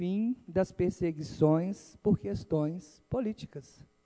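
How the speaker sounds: deliberate, slow, hushed, quiet, with pauses. In a political speech, speaker announces a change, then speaks slow, paused and quiet. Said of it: "vou falar bem pausadamente e baixinho".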